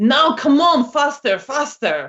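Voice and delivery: high-pitched, urgent shouting. Narrating a scene, voicing someone shouting from a side street: shouting. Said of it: "someone shouting".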